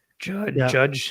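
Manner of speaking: cracking voice, breaks mid-word. Calling out a name, voice cracking.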